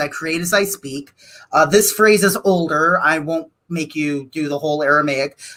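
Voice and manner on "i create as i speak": ordinary talk, nothing marked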